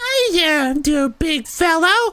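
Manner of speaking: tiny, squeaky, very high crab voice. Narrating, voice a crab that a player's magic lets them understand: squeaky crab voice. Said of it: "A sound that turns into a squeaky voice".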